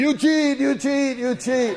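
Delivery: put-on repeated screaming. Retelling a fishing trip, imitating Uncle Ed screaming. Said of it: "he started screaming".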